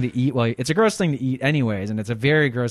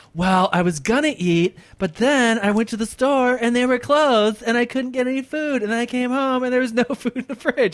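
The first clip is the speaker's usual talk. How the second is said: put-on very high-pitched girl voice; 12 semitones higher than usual. Mocking the other speaker's excuses: imitating an anorexic girl's excuses. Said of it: "one of those anorexic girls who's like".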